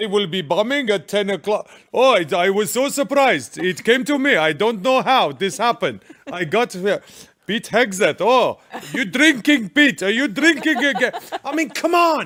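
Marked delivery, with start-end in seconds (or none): 0.0-11.1 put-on Iranian-accented voice. Imagining the Ayatollah of Iran reading a message: Ayatollah voice, Iranian accent. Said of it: "Even his Farsi is better than your British accent".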